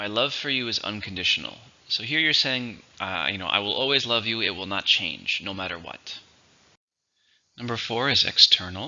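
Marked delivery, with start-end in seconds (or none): none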